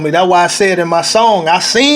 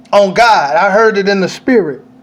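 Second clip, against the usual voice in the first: ordinary talk, nothing marked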